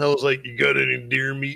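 put-on local old-timer persona voice. Retelling a phone call to her, the speaker asks in his old Hank voice. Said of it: "uses his old Hank voice".

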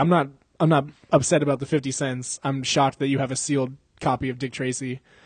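ordinary talk

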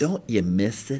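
sheepish, low-toned, quiet voice. Retelling a woman's question to him when she approached, in a low tone. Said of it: "in a low tone".

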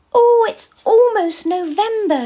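very high, loud, shrill squeal. In a Christmas story, Cam speaks to Bron, squealing. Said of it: "squealed Cam".

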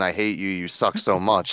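normal talking voice

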